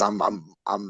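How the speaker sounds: soft, faltering voice breaking, barely holding. Apologizing to listeners for his voice mid-story: struggling voice. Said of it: "I'm sorry, guys, my voice".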